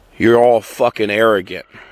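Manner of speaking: plain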